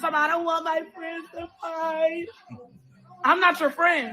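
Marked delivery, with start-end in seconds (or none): 0.3-2.3 speaking while crying, in a tearful voice. Mocking someone crying in the corner: imitating someone crying. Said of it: "you in the corner crying".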